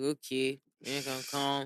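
smug, bored, flat, slow drawl. Retelling a phone call with a contact who answered: imitating a smug, uninterested voice. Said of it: "he just sounded very smug, very uninterested".

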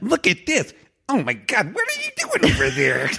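very high, quirky, swooping nerdy voice. Describing a movie star as nerdy: nerdy Anna Kendrick impression. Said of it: "this nerdy".

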